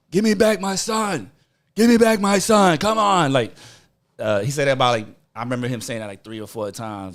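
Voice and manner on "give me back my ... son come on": yelled, high, screamed voice. Retelling how his dad screamed as she ran off carrying him: retelling a scream. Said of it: "he's screaming".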